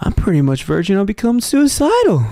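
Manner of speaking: put-on laid-back drawl. Repeating a line from the game the way Owen Wilson would say it: Owen Wilson voice. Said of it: "like the way fucking Owen Wilson would say".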